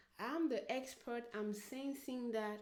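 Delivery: ordinary talk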